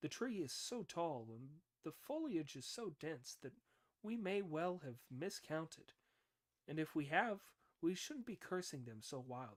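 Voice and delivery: ordinary talk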